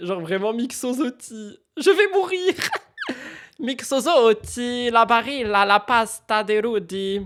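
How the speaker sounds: laughing while talking. Reacting to a funny comment, laughing while talking. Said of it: "j'en peux plus, attendez, je pleure".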